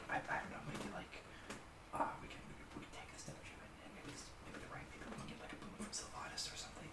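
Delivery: put-on whisper. Voicing creatures conferring so the party can't hear: whispering in character. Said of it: "just whisper, like".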